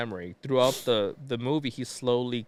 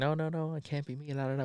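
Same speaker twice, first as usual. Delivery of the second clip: put-on panicked, freaked-out voice, higher and quieter; 4 semitones higher, 5 dB quieter than usual. Retelling a movie plot scene: imitating someone freaking out. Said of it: "he starts freaking out".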